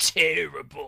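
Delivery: slow, drawn-out disdainful tone. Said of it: "let his disdain for that kiss be known".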